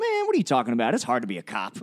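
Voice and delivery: put-on low voice with swoops. Retelling another person's reply in a put-on voice: Dark Mark voice. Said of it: "I feel like that voice wasn't racist".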